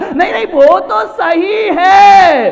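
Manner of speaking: mock jeering laughter, high, loud and slow.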